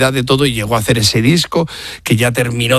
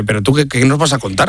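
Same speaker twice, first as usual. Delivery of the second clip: normal talking voice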